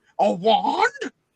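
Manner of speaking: startled, very loud, high, shocked roaring outburst. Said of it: "shocking, roar".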